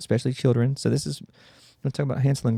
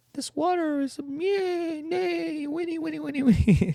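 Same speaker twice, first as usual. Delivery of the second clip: put-on creature voice with faked drowning cries. Acting out a horse creature luring someone into water: kelpie faking a drowning person's cries. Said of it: "by making the sounds of a drowning person".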